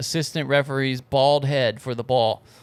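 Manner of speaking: ordinary talk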